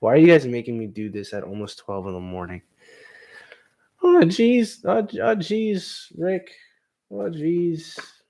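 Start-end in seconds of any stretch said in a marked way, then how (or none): 4.0-8.0 very high, cracky voice pushed up until it cracks. Pushed by friends to do voices live late at night, doing a high cracky Morty voice. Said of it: "high pitched kind of voice cracky".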